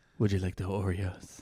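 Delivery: quiet put-on Spanish accent. Retelling a man taking their ice cream order, in an Antonio Banderas accent. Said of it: "and it was kind of talking like".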